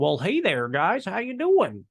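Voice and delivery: wide cartoon-like swings in pitch. Describing a man who shuffled and talked oddly, the speaker imitates him talking like Goofy. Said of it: "he even talked like Goofy".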